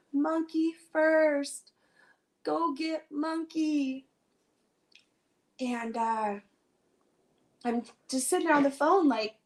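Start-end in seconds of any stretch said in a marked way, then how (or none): 0.2-4.1 very slow, high, drawn-out sobbing wail. Recalling what she screamed over the phone, imitating sobbing screams. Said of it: "just screaming, sobbing".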